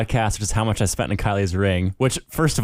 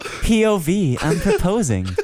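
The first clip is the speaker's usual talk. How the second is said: put-on high-pitched young girl narrator voice; 10 semitones higher than usual. Speaker riffs on a POV proposal, doing the girl TikTok voice. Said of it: "the girl TikTok voice".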